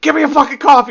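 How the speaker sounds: very loud, shrill, high-pitched, bossy screaming. Retelling how a man pretending to be the CEO treats people, speak while imitating someone screaming. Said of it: "he starts screaming at people".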